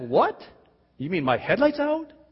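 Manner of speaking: fake surprised inflection. Showing how to lie with only inflection, in a fake surprised inflection. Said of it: "I just lied with my inflection of my voice".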